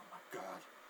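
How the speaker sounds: awed, unvoiced, soft gasping whisper.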